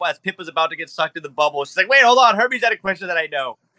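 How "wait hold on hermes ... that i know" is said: loud high-pitched yelling. Voicing a character who calls out to stop Zeus: yelling out. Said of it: "you yell out".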